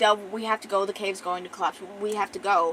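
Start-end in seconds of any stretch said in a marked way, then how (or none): none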